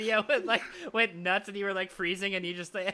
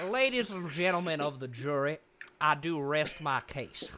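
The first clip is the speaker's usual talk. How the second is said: slow, low, drawling put-on Southern accent; 4 semitones lower than usual. An actor from outside the south addresses a jury in a southern accent. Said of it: "one of the best Southern accents I've heard from a non-Southerner".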